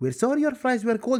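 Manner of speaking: normal talking voice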